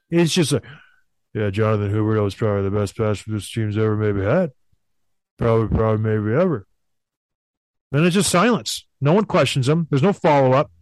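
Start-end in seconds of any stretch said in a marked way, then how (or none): 1.3-6.6 low, flat, emotionless deadpan. Describing how a man answers questions, imitating flat emotionless farmer-like delivery. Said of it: "That was a pretty good impression".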